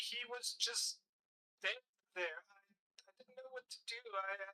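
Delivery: tearful, distraught, sobbing, crying voice. Narrating, voice a slave girl holding out a diamond to Jace, in a sobbing, crying voice. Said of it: "sobbing, crying voice".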